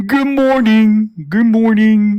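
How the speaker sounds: high-pitched cartoon character voice. Trying to recall how the cartoon character sounds, Uncle Grandpa voice. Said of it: "let me see if I can remember what Uncle Grandpa sounds like".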